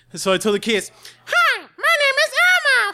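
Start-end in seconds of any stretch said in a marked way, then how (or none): 1.2-2.9 put-on very high, slow, drawn-out kids' puppet voice. Retelling doing the requested voice for the niece and nephew, Elmo voice. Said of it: "Do the Elmo's voice".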